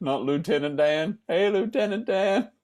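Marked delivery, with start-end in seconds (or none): 1.3-2.5 high-pitched, called-out delivery. Guessing a password, quoting a line: Forrest Gump voice. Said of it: "something that he would say".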